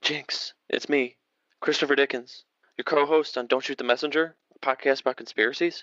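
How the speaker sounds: quiet, hushed whisper. A podcast co-host introduces themself to the person on the other end, whispering. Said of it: "why are you whispering".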